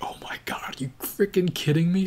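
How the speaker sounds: mock moved, disbelieving, really emotional exclamation. Retelling own reaction to a film's ending: imitating own emotional reaction. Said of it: "that's what was making me really emotional".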